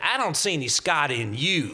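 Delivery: put-on thick Southern accent. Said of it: "who had a very heavy Southern accent".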